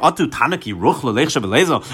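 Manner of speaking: normal talking voice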